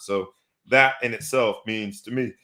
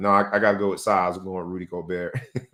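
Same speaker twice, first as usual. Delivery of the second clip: put-on deadpan flat voice, lower; 3 semitones lower than usual. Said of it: "he said it deadpan with a straight face".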